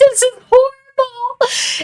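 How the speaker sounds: acted-out crying, very high and tearful. Retelling putting on the dress: imitating own past crying. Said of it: "just crying".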